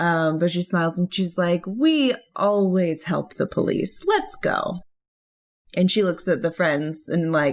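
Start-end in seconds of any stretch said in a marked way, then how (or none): 1.7-4.8 heavy, dripping, horribly sarcastic. Voicing a character answering the police while smiling: horribly sarcastic. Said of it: "she is being horribly sarcastic".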